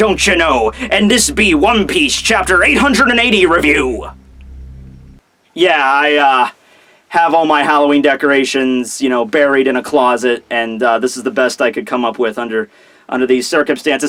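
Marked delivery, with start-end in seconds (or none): 0.0-4.1 put-on pirate voice. Opening a chapter review video, playing a stereotypical pirate voice. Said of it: "I be a stereotypical pirate".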